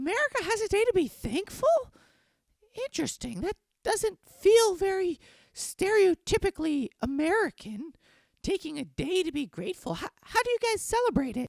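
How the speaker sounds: very high-pitched little pet dog voice. Voicing the silent Pomeranian co-host who complains about traditions: voicing Oscar the Pomeranian. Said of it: "guy who doesn't say anything 'cause I do his voice".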